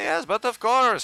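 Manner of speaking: put-on Austrian accent. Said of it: "you magically turn Austrian".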